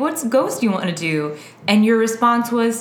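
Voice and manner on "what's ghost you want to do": usual speaking voice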